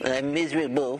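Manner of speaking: high, cartoonish cartoon dog voice.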